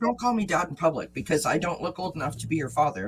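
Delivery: ordinary talk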